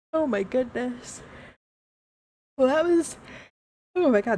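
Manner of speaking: words stretched by yawning. Speaker thanking a chatter for checking in, yawning while talking. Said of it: "sorry for yawning".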